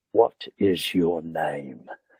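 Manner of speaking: put-on heavy, dark, deep-throated, hushed English accent. Retelling a man holding your hand and asking your name: deep-throated English accent. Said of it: "deep throated English accent".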